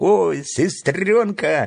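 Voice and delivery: glad, happy exclamation. Freddie greets his sister Elly as she arrives, with a joyful exclamation. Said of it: "радостно воскликнул Фредди".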